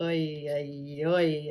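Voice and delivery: put-on old-world European accent.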